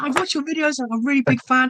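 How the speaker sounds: very high-pitched, thrilled, excited gushing voice. Retelling what a visiting fan said on meeting the speaker: imitating an excited fan. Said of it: "so excited".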